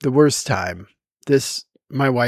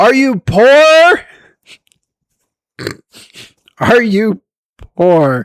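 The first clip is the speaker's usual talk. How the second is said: really loud, high, drawn-out, stretched blurt; 10 semitones higher, 7 dB louder than usual. Recounting asking someone a question out loud, in a really loud voice. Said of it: "in a really loud voice".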